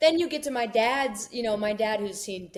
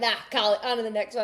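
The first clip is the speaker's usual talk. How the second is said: ordinary delivery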